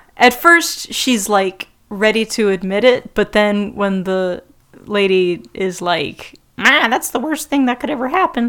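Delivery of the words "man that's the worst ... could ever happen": woman's voice, done as a character voice. Retelling a scene from the show: impression of the lady. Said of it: "That's my impression".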